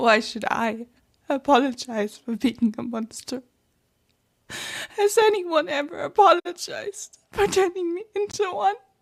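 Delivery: sad, tearful crying delivery with voice crackle. Performing a voice line about being made a monster: sad, crying delivery with crackle. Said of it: "the crying sensation".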